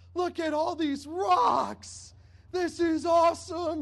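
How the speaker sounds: put-on very high, loud, drawn-out excited child's squeal. Retelling her finding a pile of rocks at a beach cove: imitating an excited child. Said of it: "she got so excited, like".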